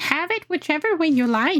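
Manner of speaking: squeaky, high, shouted creature voice. Narrator reading a creature calling out near your hiding place, squeaky shouting creature voice. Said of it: "shouts the creature in a squeaky voice".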